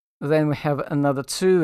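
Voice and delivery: ordinary talk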